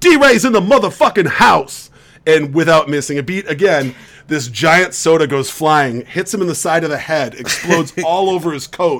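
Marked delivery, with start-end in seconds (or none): 0.0-1.9 acted, loud, high-pitched, full-lung yell. Telling a story, the speaker acts out a guy walking in: retelling a guy's yell. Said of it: "he yells at the top of his lungs".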